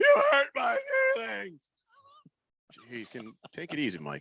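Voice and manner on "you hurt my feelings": very high-pitched, upset, tearful crying voice. Imitating a coach who sounds upset: imitating Mike Malone sounding upset. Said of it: "it sounds like he's crying".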